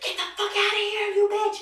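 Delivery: high, loud, furious angry yell.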